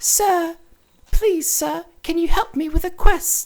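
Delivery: put-on very high English boy voice. Describing a game, voicing the little lad who asks for help with a quest. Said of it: "he has English voice acting".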